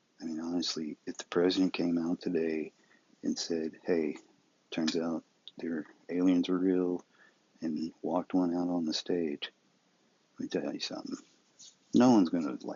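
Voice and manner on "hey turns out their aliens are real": usual speaking voice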